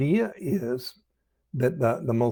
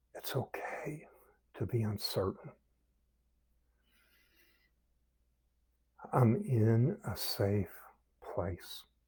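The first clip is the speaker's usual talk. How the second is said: very soft, slow-breath, hushed whisper on the out-breath; 3 semitones lower, 9 dB quieter than usual. Leading a breathing exercise, saying the chosen sentence on the out-breath: whispering. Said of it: "we whisper".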